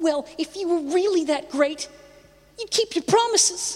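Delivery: put-on very high-pitched, cornball American accent. Quote Dorothy stepping forward even while shaking, as Dorothy in a cornball American accent. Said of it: "in a cornball American accent".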